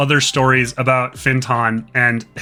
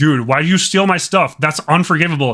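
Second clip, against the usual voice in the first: put-on angry voice, higher; 3 semitones higher than usual. Retelling how Oberon confronts a thief: imitating pissed-off Oberon. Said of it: "Oberon's all pissed at him".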